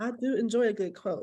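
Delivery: ordinary delivery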